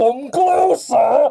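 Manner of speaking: very high, eerie, horrible, echoing creature voice. Retelling a story where an alligator talks without moving its mouth, horrible echoey alligator voice. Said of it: "this horrible echoey voice is like".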